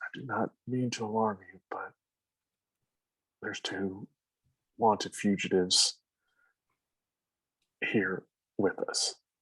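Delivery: discreet, hushed mutter under the breath. Voicing a character who leads a player far away: muttered under his breath. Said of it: "under his breath".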